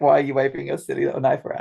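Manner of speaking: ordinary delivery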